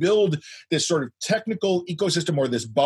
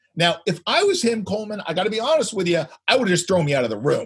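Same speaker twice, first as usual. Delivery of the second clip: plain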